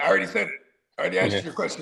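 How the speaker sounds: sarcastic, snippy, snarky tone. Imitating a coach answering a reporter's question: imitating Mike Tomlin being snarky. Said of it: "he gets snarky".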